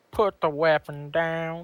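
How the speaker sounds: slow cartoon hound dog character voice. Repeating a line after being asked for a voice: Droopy Dog voice. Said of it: "do the voice of Droopy Dog".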